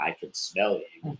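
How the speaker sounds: slow, deliberate celebrity voice, every word drawn out. Retelling a gamer's line done in a Morgan Freeman voice. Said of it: "do your Mir-, Morgan Freeman voice".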